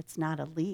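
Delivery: ordinary delivery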